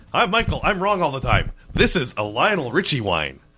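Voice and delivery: teasing, high-pitched put-on voice. Tasting wine with another speaker, doing an impression of michael. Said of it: "let me do my impression of Michael".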